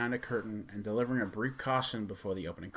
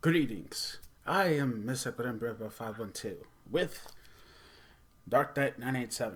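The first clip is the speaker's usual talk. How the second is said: accent from Transylvania. Reviewer greeting his audience to open a Halloween review, Transylvanian accent. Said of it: "Sorry about the Transylvania accent".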